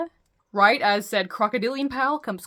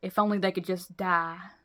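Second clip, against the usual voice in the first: put-on muttered, low Southern accent; 2 semitones lower, 4 dB quieter than usual. Recapping a show, retelling what Pearl muttered: muttering in Pearl's Southern accent. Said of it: "My Southern accent needs a little bit of adjustment".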